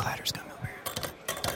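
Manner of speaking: unvoiced, hushed whisper.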